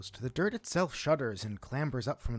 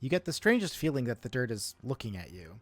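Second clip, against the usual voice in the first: ordinary delivery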